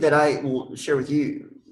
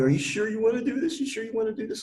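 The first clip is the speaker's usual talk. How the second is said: high-pitched mock crying, tearful and begging; 8 semitones higher than usual. Retelling how his mom came out asking if he was sure, imitating her crying. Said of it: "My mom comes out crying".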